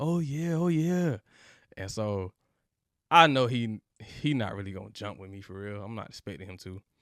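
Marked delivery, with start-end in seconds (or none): 0.0-1.2 put-on, high, long, drawn-out hollering yell. Recounting a fast break, quoting the other player coming at him: retelling someone yelling. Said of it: "he's yelling like".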